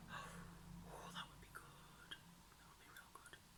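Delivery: very hushed, soft, breathy whisper. Thinking aloud about plans for the month, whispering. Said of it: "I don't know why I'm whispering".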